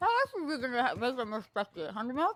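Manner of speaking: muffled words blurred by chewing with full mouth. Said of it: "when you talk when you with your mouth full".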